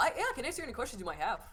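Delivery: halfling voice with amused laughter coming through the words. Voicing a halfling at the front desk, greeting the players: Kevin the halfling's voice.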